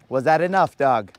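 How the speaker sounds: ordinary delivery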